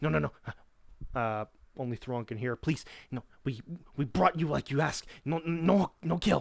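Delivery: panicked goblin voice, pleading and begging. Voicing a goblin who rolls away with raised hands: goblin begging for mercy. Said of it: "rolls away from you, putting up his hands".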